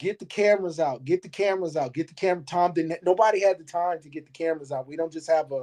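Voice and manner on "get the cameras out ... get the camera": ordinary delivery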